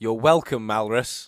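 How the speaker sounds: very loud speaking. Speaking in character while invisible in a kitchen: speaking very loudly. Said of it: "very loudly speaking".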